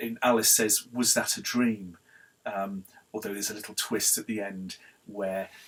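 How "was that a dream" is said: ordinary talk, nothing marked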